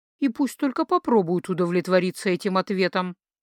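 plain

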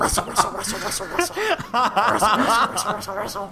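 high, giggling imitation of rustling noises. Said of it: "What does that sound like?".

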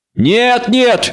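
snide mocking tone. The witcher's companion urges the old woman to keep reading, snide protest. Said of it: "запротестовал Лютик, ехидно ухмыльнувшись".

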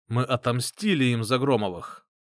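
ordinary delivery

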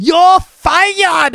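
bad, cheesy put-on American accent, very high and shrill. Retelling how a soap character fires someone: cheesy bad American accent. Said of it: "really cheesy, bad American accent".

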